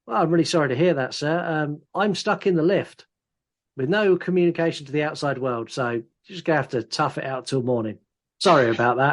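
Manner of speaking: plain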